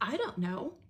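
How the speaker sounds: put-on defensive, dismissive, brushing-off tone. Retelling his answer about the sandals: imitating a defensive reply. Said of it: "he gets defensive and says".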